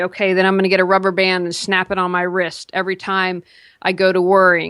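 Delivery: ordinary delivery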